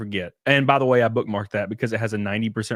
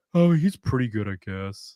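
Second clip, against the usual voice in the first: play-acted indifferent, unimpressed, lukewarm tone. Retelling an unimpressed girl's reply to his guitar playing: imitating an indifferent tone. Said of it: "just not giving a fuck".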